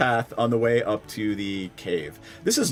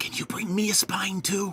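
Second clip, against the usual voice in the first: soft, high-pitched whisper; 7 semitones higher, 5 dB quieter than usual. Player voicing a character who whispers into another's ear: whispering in someone's ear. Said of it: "she like whispers in your ear".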